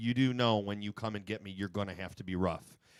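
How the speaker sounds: normal talking voice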